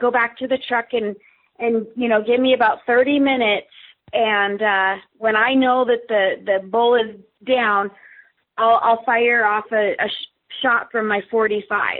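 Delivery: ordinary delivery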